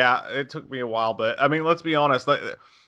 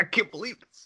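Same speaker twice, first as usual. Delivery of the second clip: mock thrilled, high, excited young boy's outburst; 8 semitones higher, 6 dB quieter than usual. Imitating the boy in the movie: imitating an excited boy. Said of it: "I love how excited he gets".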